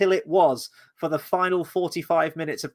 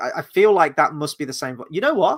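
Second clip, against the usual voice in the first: usual speaking voice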